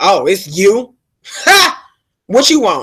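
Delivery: slow, rude, sneering, unimpressed delivery. Retelling a confrontation at a door: imitating a neighbor's rude greeting. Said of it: "she was like".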